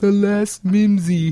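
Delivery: high female voice with deaf speech quality. Retelling a Family Guy scene, quoting the deaf caller: imitating the deaf lady's speech. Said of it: "the deaf lady... she goes".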